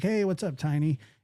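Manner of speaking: mock sarcastic tone. Speaker recalls how people greet them, retelling a sarcastic greeting. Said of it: "in the sarcastic way".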